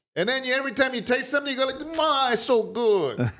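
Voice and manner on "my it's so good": horrible, put-on Italian accent, spoken very slowly. Describing how visitors to a little Italian town start talking, horrible Italian man reenactment. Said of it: "probably a horrible reenactment of an Italian".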